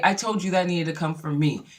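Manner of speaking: put-on angry voice. Retelling a show quarrel: imitating angry Nene. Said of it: "Nene was pissed".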